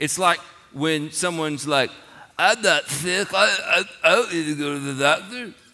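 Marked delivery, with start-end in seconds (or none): 2.4-5.5 put-on stuffy, nasal, stammering sick-sounding voice. Acting out someone who denies being sick: mocking a nasal sick voice. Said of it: "Are you making fun? It kinda sound like that".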